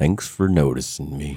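downtrodden, dejected, ignored-sounding donkey voice. Naming a favorite character, the speaker does an Eeyore impression. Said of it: "that's a good impersonation".

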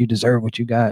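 mock whispering. Retelling a movie scene where someone gets next to a victim: imitating someone whispering. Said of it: "starts whispering".

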